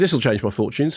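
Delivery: ordinary talk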